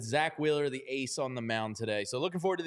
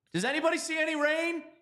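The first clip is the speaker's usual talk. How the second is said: shouting, higher pitch; 14 semitones higher than usual. Asking whether anybody sees rain after a rain delay: yelling. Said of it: "why are you yelling?".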